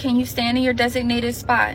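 normal talking voice

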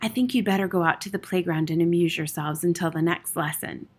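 ordinary delivery

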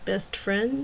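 gentle. Narrator reads her reply to the man who turned his head away, gently. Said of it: "she said gently".

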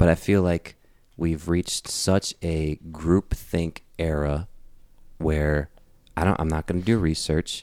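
calm, even tone. Repeating a point so as not to seem mad, in a calm voice. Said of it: "maybe I won't seem as mad if I say this in a calm voice".

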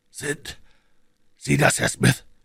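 high, carrying stage whisper. A sick man, just shaken by the shoulder, greets his visitor: whispering. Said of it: "flüsterte Holmes".

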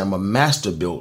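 stress leaning on master. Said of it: "He said".

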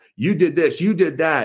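plain

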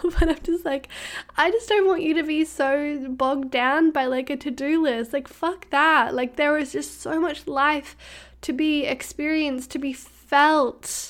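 tearful, crying while talking. Speaker addresses the listeners directly, crying while speaking. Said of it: "And I'm crying right now".

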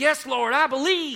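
put-on American Southern accent, high and loud. Speaker acting out people answering a Bible verse, in their best southern accent. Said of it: "that's my best southern accent".

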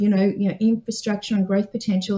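plain

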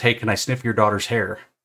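put-on creepy old man voice. Acting out a stranger at the mall: imitating a creepy old man. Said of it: "he's the creepy old man that walks up and says".

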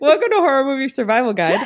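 high-pitched voice breaking and cracking. Podcast host opening the episode, voice cracking. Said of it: "My voice broke".

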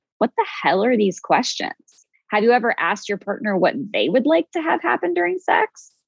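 sarcastic, cutting, snarky tone with swooping pitch. Retelling a reaction to questions received: imitating own snarky reaction. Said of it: "I was very snarky in my replies".

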